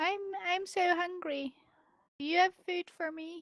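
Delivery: cute, high, little meow-like voice. Speaker voicing a lady who asks for food, in a cute high-pitched meow voice. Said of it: "like high mo most high pitched like meow sound".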